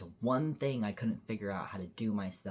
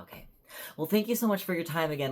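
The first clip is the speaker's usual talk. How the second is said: apologetic, placating politeness, high and raised; 8 semitones higher, 6 dB louder than usual. Retelling thanking a clinic worker after being rude: imitating own smoothing-over thanks. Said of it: "I was trying to smooth it over".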